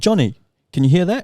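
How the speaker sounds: loud, high-pitched yelling. Retelling a noisy night, calling out to a housemate: retelling a yell. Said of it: "So I yelled out to my housemate".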